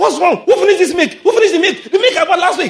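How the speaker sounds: high, loud, angry, furious shouting.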